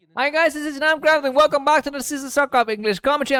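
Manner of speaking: very high, loud shouting. Opening a commentary video while it rains outside, shouting. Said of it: "I'm shouting because it's raining outside".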